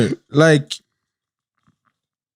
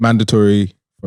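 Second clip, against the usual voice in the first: usual speaking voice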